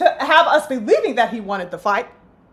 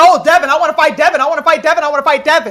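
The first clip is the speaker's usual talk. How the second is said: sudden, eager, mock hyped-up boxer voice; 4 dB louder than usual. Mocking a fighter who suddenly wants a fight: mocking Rolly's hype. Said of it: "he got all hype out of no goddamn where".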